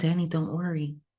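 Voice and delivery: normal talking voice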